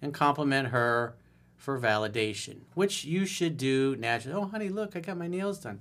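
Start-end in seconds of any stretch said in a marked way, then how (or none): 4.4-5.8 put-on high, sugary, saccharine sweet voice. Describing a woman who asks for compliments, in a mock sweet voice. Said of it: "putting on a sweet voice".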